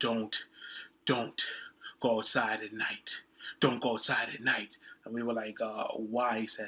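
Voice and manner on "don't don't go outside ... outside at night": mock breathless, out-of-breath voice. Retelling a stranger's warning to the group, imitating being out of breath. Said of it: "He's, he's out of breath. / this guy comes running out of nowhere, / He's, he's out of breath. / there are ghosts and they like to fight".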